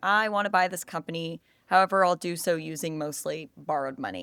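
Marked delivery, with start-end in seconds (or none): none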